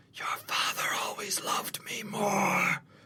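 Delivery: taunting whisper. Voicing a character who whispers as a player goes by: whispering a taunt. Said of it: "he whispers something as you go by".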